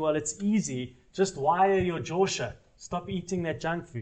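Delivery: sarcastic, mocking reply tone. Retelling what an older training partner used to say: imitating a sarcastic training partner. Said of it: "he used to say to me sarcastically".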